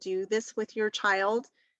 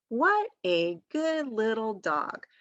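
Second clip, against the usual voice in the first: slow, pointed, word-by-word reading aloud. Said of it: "point and read".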